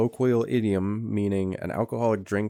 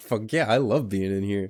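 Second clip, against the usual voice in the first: put-on swaggering voice. Retelling how Jack struts into the bar: imitating Jack strutting, swaggering. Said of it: "he starts fucking kinda strutting his stuff".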